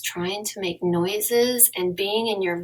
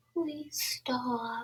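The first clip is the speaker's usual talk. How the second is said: meek, feeble, timid, very quiet voice; 3 semitones higher, 11 dB quieter than usual. Speaker shows a way of saying please stop that won't work: timid, weak plea. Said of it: "if I do it like this".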